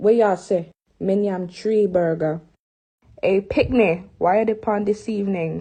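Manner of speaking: attempted put-on Jamaican accent. A friend, asked to do a Jamaican accent, gives it a try: attempted Jamaican accent. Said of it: "I told my friends to do a Jamaican accent".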